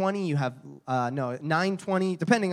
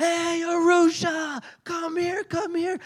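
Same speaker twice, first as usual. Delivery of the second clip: very high, stretched, drawn-out shout; 14 semitones higher, 3 dB louder than usual. As MC at an outreach, he re-enacts shouting to draw people over. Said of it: "I start shouting".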